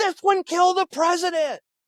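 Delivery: high, loud shout. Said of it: "they're shouting at each other".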